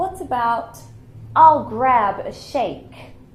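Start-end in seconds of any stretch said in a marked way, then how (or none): 1.4-2.9 American accent, very loud. Teaching british english, showing a phrase brits wouldn't use: american accent. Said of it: "I said that in my American accent".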